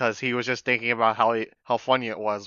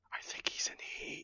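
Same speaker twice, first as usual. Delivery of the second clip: hushed, in-character whisper. Voicing a character who leans to a companion's ear: whispering in character. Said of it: "I whisper in his ear".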